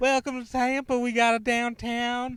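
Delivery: put-on high, loud, strange effeminate Louisiana accent. Retelling greeting people who got in the car: weird effeminate Cajun accent. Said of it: "weird, strange, uh, Louisiana, Cajun, effeminate".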